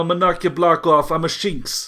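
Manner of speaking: loud, put-on Brooklyn accent. Redoing a character's line after saying the voice was wrong: put-on Brooklyn accent. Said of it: "I was using the wrong voice".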